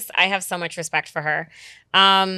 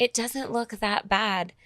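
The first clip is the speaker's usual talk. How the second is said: the sweetest, sugary sweet voice; 2 semitones higher, 7 dB quieter than usual. Retelling what a best friend said about the eyebrow tattoo: imitating Jasmine's sweetest voice. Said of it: "in the sweetest voice ever".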